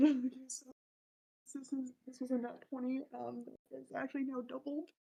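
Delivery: muttering unclearly. Reporting a roll to the group during a tabletop game, mumbling. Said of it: "stop mumbling".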